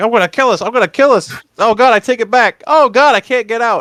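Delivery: put-on, high-pitched, frantic, panicked tantrum, losing it. Complaining about an annoying movie character, imitating Carter's panicked tantrum. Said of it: "Carter throwing his tantrum".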